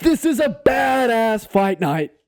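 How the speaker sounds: very high-pitched fight-promoter announcer voice. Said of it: "something else he would say".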